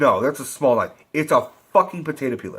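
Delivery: ordinary talk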